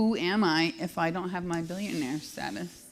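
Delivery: ordinary delivery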